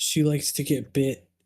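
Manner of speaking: whispered aside. Whispering a secret about Luna to a character: whispering. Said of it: "I'm gonna whisper to him".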